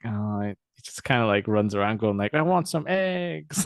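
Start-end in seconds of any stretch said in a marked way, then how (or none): 2.3-3.7 bad, vague Mexican accent, high and slow. Describing a character in a poor episode, in a bad vaguely mexican accent. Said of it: "he's got like a bad sort of vaguely Mexican accent".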